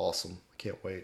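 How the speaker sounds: beaten-down, deflated, downcast, dejected, sad tone. Podcast co-host replies to a teasing promise about a sequel, beaten-down and sad. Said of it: "I love it when your voice gets that kind of, like, beaten down, sad tone".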